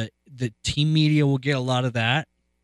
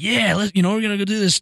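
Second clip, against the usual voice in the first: gushing, over-eager, super excited, high and quick; 8 semitones higher than usual. Showing how a coach does not talk: imitating someone super excited. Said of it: "a super excited, like".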